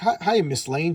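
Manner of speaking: mocking, teasing, taunting jeer. Retelling a movie scene, quoting Lex Luthor's greeting: imitating Lex Luthor mocking. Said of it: "kinda making fun of him".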